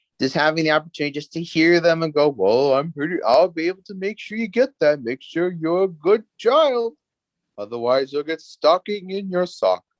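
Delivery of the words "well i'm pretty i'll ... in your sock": jolly, put-on character voice. Recalling playing Santa and answering children's Christmas wishes, in a jolly Santa voice. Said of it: "I'm out doing the voice".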